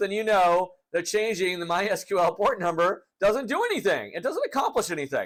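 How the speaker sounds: voice breaking mid-sentence. Tutorial host walking through a MySQL security question, voice cracking. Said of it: "my voice is cracking".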